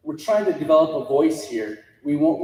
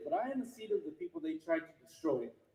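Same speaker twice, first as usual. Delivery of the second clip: very quiet, emotional, emotion welling up, pitched up; 9 semitones higher, 16 dB quieter than usual. Speaking to those gathered here, getting emotional. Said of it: "I just get emotional when I say it".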